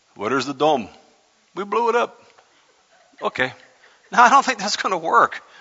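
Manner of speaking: accent from the Middle East. Doubting with another speaker that the peace treaty will work, put on your best Middle Eastern accent. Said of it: "That's my best Middle Eastern accent".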